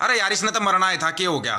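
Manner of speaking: plain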